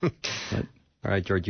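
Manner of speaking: slow, choked-up voice, fighting back tears. After sharing news of an engagement, the speaker hands off to another speaker, choking back tears. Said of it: "because I'm choking back tears".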